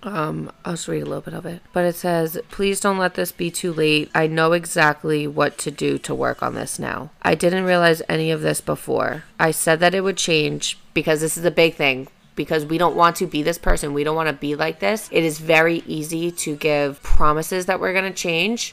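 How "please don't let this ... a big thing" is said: ordinary delivery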